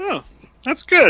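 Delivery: very high-pitched puppet voice. Echoing the other speaker's remark, in a Muppet voice. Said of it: "You sounded like a Muppet when you said that".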